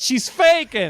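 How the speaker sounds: loud, blunt, carrying voice. Retelling a remark said in a crowded theater as she appeared on screen, retelling a loud remark. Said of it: "I loudly said".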